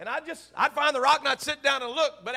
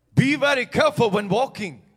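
put-on loud, raised voice with a French-sounding accent; 3 semitones lower, 5 dB louder than usual. Retelling a hunting tracker's warnings: William's French-sounding accent. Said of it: "he had that French-sounding accent".

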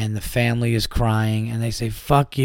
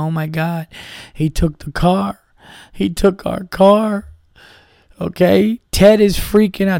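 mock, tearful crying voice; 8 semitones higher, 5 dB louder than usual. Retelling a phone call from an aunt about a stolen car: imitating an aunt crying. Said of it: "calls you up crying".

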